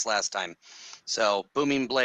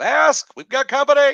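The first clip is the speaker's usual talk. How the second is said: put-on shrill, very loud, high-pitched shout; 12 dB louder than usual. Warning a companion in a dungeon that enemies are coming: yelling in character. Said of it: "I am now about to yell".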